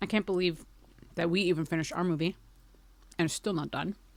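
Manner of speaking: chewing while speaking. Chatting with the audience in the chat, talking while chewing. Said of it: "sorry, I'll stop chewing".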